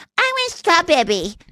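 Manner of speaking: put-on sweet, high little-girl voice. Imitating a little girl in an online video: imitating a little girl. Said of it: "a girl being like".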